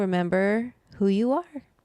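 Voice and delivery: cracked voice, breaking mid-line. Closing the show, the speaker addresses the audience: voice cracking. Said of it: "My voice kind of cracked".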